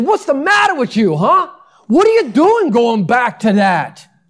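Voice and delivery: put-on speaking with New Jersey accent. Retelling Paul's words to the Galatians, as Paul with a Jersey accent. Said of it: "If he was from Jersey".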